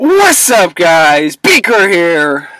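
very loud, high-pitched voice bursting with enthusiasm. Greeting viewers at the start of a tutorial: very enthusiastic and loud. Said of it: "that's what I sound like if I am very enthusiastic and loud".

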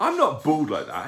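high, offended, indignant voice. A barn owl looks at the pad and protests to the young lady, indignant. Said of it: "he said indignantly".

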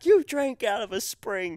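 shrill, high-pitched yell. Recounting an argument, the speaker acts out the other person's reply: retelling a yell back. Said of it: "And you're just like yelling back".

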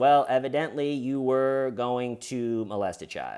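ordinary talk

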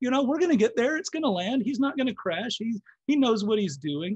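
high, loud, carefree mock voice. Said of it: "And we just say".

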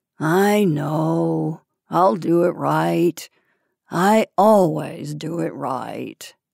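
drowsy, sleepy, creaky, half-asleep, know drawn out. A narrator reads the dog's reply after it is told to wake up, sleepy. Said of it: "The dog nodded sleepily".

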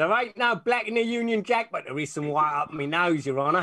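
put-on Australian accent all the way through. Giving a line the person should not say in court: Australian accent. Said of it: "Is he Australian?".

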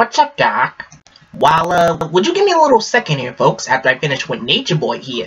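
cocky, wisecracking cartoon rabbit voice. In a Looney Tunes voice impressions video, Bugs Bunny voice.

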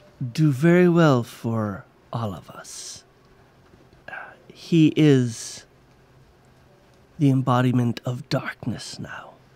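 low, ominous, sinister dark druid voice. Game master voicing a figure the players overhear talking, in a dark druid voice. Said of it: "And you see the dark druid".

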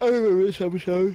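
yawning while talking. Watching a TV episode with others, speaking through a yawn. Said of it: "sorry, I was yawning".

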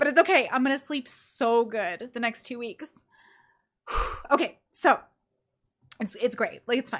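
talking through tears, crying. The speaker explains they are crying from exhaustion, then keeps talking: crying while talking. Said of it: "I'm literally crying because I'm exhausted".

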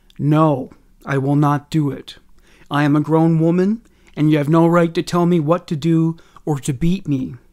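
ordinary delivery

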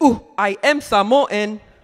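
loud, slow caveman-ish voice with words drawn out. Telling a story, pressed to prove being Samoan, answering in a caveman-ish voice. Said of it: "Like caveman-ish".

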